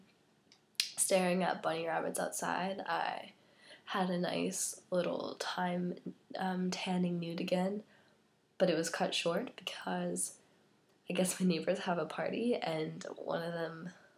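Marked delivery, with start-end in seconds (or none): 6.4-10.3 whispery, barely voiced, sore-throat sick voice. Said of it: "It kinda hurts to talk".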